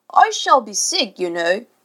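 menacing, threatening tone. Narrator reads Mr. Darling speaking to his son Michael, threatening. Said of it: "Mr. Darling said threateningly".

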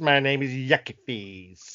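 put-on old-fashioned pimp voice. Imagining a character as a 1940s british pimp, put-on pimp voice. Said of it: "like a nineteen forties British pimp".

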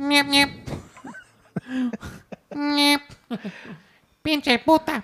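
very high, squeaky, honking horn-like voice. Imitating a TV character whose voice sounds like a bike horn: imitating a bike-horn voice. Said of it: "old school, um, bike horns".

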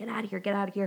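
acted screaming. Retelling a story, acting out what a woman screamed; retelling a scream. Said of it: "And she's screaming".

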